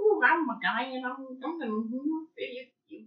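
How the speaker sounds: put-on horror villain voice. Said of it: "here's my Michael Myers impression".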